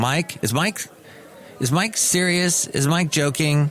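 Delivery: plain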